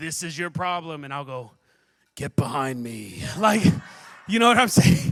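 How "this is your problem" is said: deep echoing voice, much lower. Imagining the Lord speaking to them, the speaker does a deep God voice with reverb. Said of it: "he will speak with his deep voice with all the reverb on it".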